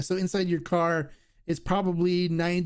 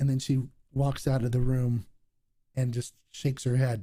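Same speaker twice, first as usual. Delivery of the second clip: ordinary talk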